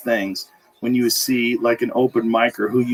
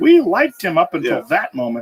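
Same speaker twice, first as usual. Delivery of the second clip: weird put-on old lady voice, high, swooping; 6 semitones higher than usual. Joking about how critics would react, weird put-on grandma-like voice.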